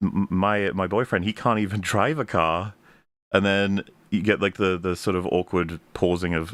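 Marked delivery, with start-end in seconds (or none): none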